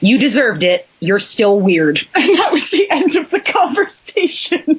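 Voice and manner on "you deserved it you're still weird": mock bone-dry, matter-of-fact deadpan, no reaction. Recounting their mother's reply to them, imitating mom's deadpan. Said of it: "she deadpanned me".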